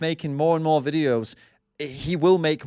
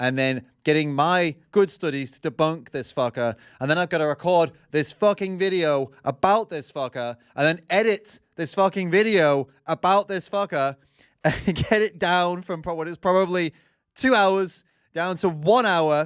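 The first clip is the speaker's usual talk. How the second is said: ordinary talk, nothing marked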